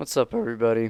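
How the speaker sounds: voice breaking. Opening a video by greeting everybody, voice cracking. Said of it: "that voice crack".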